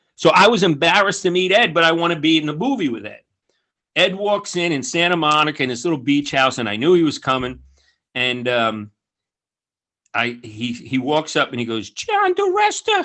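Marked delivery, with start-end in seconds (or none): 11.9-13.1 very high-pitched voice. Retelling meeting Ed, who greets him by name; imitating Ed's high-pitched voice. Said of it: "he's got a high pitched voice".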